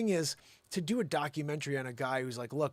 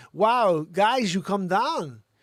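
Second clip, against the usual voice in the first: loud, very slow celebrity voice, every word stretched; 6 semitones higher, 12 dB louder than usual. Showing voices that stick in memory: Christopher Walken voice. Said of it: "Christopher Walken talking".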